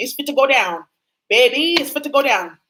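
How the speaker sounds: speech with a laid-on New Orleans accent. Telling the audience to grab snacks and watch, New Orleans accent. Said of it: "in my New Orleans accent".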